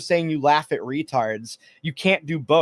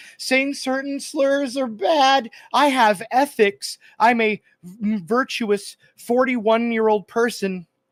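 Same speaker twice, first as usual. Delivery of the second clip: mock whiny voice, higher pitch; 8 semitones higher than usual. Mocking the other speaker in an argument about virtue signaling: mock whiny imitation of the other speaker. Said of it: "You're like".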